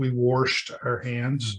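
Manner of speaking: slow West Virginia drawl on the word washed.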